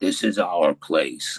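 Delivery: very low, nasty, menacing ghostly voice. Retelling a voice heard in the cell after asking about leaving, nasty low voice. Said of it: "in a very nasty, low voice".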